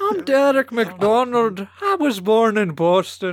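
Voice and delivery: hammy, bad put-on Irish accent. Improvising a character introducing himself, bad put-on Irish accent. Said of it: "these, like, ass-fucking shillelagh voices".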